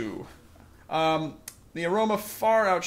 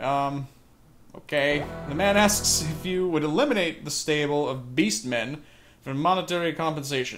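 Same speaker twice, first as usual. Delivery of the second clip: ordinary delivery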